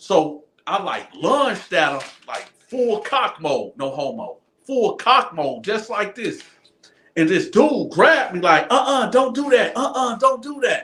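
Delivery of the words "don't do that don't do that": put-on high, womanly older-woman voice. Retelling being grabbed mid-fight, voice like an older female guard. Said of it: "I thought it was a female guard, like an older female guard, because of the voice".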